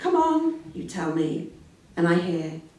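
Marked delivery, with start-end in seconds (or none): 0.0-0.6 very high, brisk, overly cheerful forced cheer. Quoting the other person's encouragement: imitating an overly cheerful, brisk voice. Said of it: "the children's party voice".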